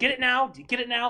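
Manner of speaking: aggressive, very loud, high, impatient nagging. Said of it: "Aggressively tutors".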